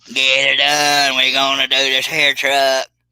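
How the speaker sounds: drawn-out, high character voice. Doing a requested voice while cutting hair: Mater voice. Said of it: "[name]'s Mater voice".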